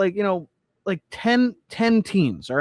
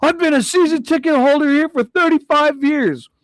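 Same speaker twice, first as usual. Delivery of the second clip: high, declaring announcement voice; 7 semitones higher, 4 dB louder than usual. Retelling what a fan announced to a booing crowd: imitating a man announcing to a crowd. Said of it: "He starts announcing to the crowd".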